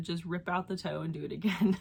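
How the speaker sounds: ordinary talk, nothing marked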